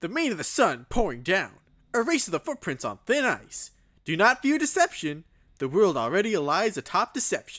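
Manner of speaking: high, loud character voice with swooping pitch. Reading a poem aloud after being asked for an impression: Sonic impression. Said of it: "do a Sonic impression".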